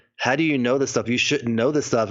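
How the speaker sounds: plain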